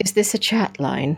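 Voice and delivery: put-on refined British accent. Speaker retells a woman caller's question to her, very fine british accent. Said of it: "in her very fine British accent".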